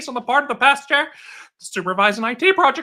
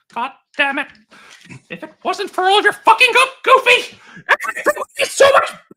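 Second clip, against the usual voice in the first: high, loud, purely evil cartoon voice; 8 semitones higher, 5 dB louder than usual. Showing a terrible, terrifying evil Mickey voice: evil Mickey voice. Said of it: "terrible evil Mickey".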